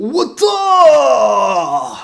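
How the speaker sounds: very high, very loud, long drawn-out yell. Recapping a scene where Erwin signals to fire at the Titan, Erwin impression. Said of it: "Here's my Erwin impression".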